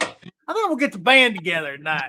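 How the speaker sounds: animated sing-song, pitch swooping up and down. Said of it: "where [name]'s in it? He's like".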